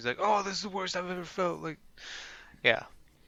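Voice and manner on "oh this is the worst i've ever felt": super dramatic, agonized, high-pitched lamenting tone. Imitating a video host reacting to an insect sting: imitating Coyote Peterson, super dramatic. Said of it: "He's always super dramatic".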